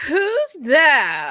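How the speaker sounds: high, haughty, imperious yell. Voicing a guard calling down from a parapet: imperious yell. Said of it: "yell down at you imperiously".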